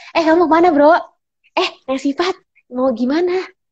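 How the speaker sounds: easygoing, friendly tone. Casually greeting a friend, bro: warm friendly tone. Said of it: "Tonasi yang temen yang hangat kayak gini misalkan".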